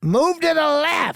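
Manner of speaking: put-on very high, drawn-out, nasty old lady voice. Retelling a passing lady with a dog telling you to move, imitating a nasty old lady. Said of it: "And she gives you that scowl".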